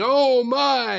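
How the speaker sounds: mock shouted wrestling commentary. Retelling doing wrestling commentary as a kid: shouting like Vince McMahon. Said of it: "here I am shouting".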